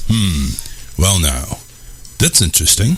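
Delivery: flat, low, uninterested murmur. Speaker describing a boring talk show host, mimicking him, in Tom's boring monotone voice. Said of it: "talks in a monotone voice, kind of like this".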